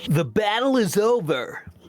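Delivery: put-on surfer-dude voice. Speaker putting on a voice, remarked on by another speaker, generic surfer voice. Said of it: "you did a surfer voice".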